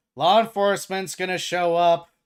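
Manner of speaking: very loud, high-pitched shout. Narrating a scene to players, voicing a man who is shouting. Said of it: "he shouts".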